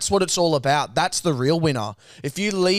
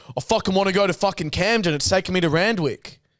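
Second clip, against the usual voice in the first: acted combative, hostile, aggressive man's belligerent cadence; 4 semitones higher than usual. Retelling what the Uber driver said during the ride: imitating an aggressive man. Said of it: "he had the cadence of a fucking like aggressive man".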